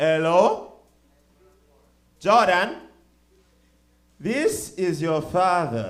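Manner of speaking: put-on heavy Nigerian accent, very loud, slow, drawn out. Retelling a father's voicemail: imitating father's thick Nigerian accent. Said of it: "his thick-ass Nigerian accent".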